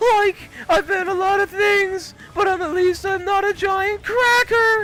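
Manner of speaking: cartoonish high-pitched voice. Retelling a meme audio clip, working on a Shaggy voice. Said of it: "there's this meme audio going around of him being like".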